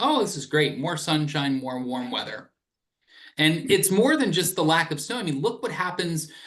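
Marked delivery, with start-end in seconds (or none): none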